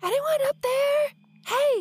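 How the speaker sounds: loud high-pitched stage whisper. A player's character calls up to the watchtower at the city gate, whisper-yelling. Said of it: "I'm going to whisper yell".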